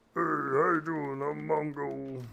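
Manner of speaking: rough, creaky orc peon voice. Introducing the character Mongo in the game, the player uses Mongo's orc peon voice. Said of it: "who kind of more sounds like an orc peon".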